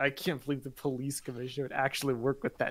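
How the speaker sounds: disgusted muttering under breath. Retelling how a character says a line: imitating disgusted muttering. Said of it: "he says it, like, disgusted under his breath".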